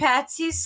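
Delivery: ordinary delivery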